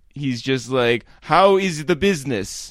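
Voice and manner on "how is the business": put-on stiff, stilted Israeli-accented English. Act out Lior questioning anyone he can find on his travels, in Lior's stilted Israeli accent. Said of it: "stilted Israeli accent".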